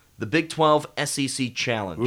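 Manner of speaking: plain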